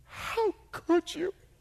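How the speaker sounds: put-on very high, sobbing, reproachful tone. Retelling how she reacted to his letter, the speaker imitates someone crying. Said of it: "And she's like crying".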